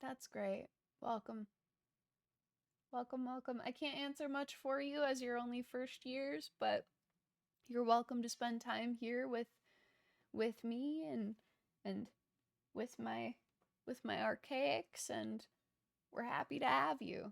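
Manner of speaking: very small casual voice. Voicing the Oracle greeting players in their minds: very small casual-sounding voice. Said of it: "a very small, kind of casual sounding voice".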